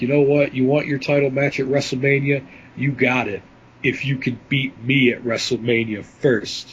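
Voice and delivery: ordinary talk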